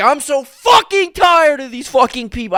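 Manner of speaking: play-acted furious, fed-up scream, very high, loud. Retelling leaving the shop and sitting in the car: retelling a furious yell. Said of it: "I yelled".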